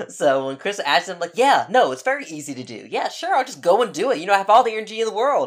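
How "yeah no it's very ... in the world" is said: sarcastic, mock-agreeing, go-along tone. Retelling own past replies when asked to do something: imitating own sarcastic tone. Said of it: "I can be a sarcastic asshole".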